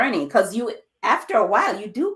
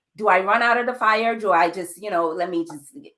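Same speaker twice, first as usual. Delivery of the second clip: plain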